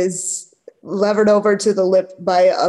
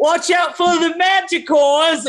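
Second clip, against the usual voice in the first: acted-out shout, very high-pitched yelling; 9 semitones higher than usual. Voicing a bystander shouting down at the party on the rope: yelling a warning. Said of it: "another person's yelling".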